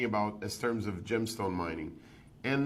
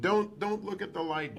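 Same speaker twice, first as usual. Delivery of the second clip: put-on scream, higher pitch; 9 semitones higher than usual. Retelling how he slapped a fainted person awake, imitating someone screaming. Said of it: "he was screaming".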